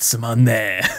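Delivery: put-on typical bored anime child voice. Showing how to sound like a typical anime bored kid. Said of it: "sound like a typical anime bored kid".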